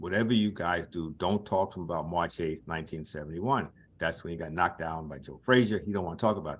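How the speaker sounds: ordinary talk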